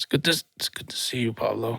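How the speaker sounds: effortful, strained, hushed deep voice squeezed from inside. Greeting Pablo at the start of the episode, in a straining voice. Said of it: "You sound like you're straining".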